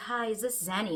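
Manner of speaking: put-on soft, seething tone. Retelling a woman's phone call to the speaker, imitating Legs, soft but seething. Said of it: "this woman is speaking so softly".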